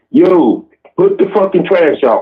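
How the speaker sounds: put-on harsh, angry, slow and deliberate delivery. Showing how a third reminder about the trash sounds: angry order. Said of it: "Third week".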